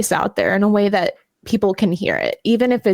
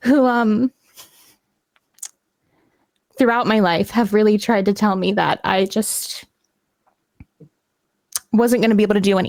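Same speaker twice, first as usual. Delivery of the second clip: holding back emotion, slower. Talking about people who said they couldn't do anything, holding back emotion. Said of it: "I'm trying not to get emotional".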